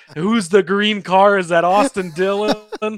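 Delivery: startled, alarmed screaming exclamation. Retelling watching a race wreck with family: retelling own screaming. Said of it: "I was screaming".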